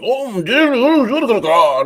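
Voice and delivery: high, wide mock cry, pitched way up.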